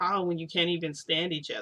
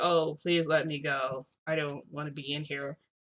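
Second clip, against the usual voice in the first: put-on slow, wooden, stilted voice, as if read. Speaker acting out a character's plea to be let go, mock stilted script-reading plea. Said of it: "It sounds like they're reading from like a script".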